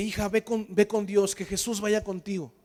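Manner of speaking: ordinary talk, nothing marked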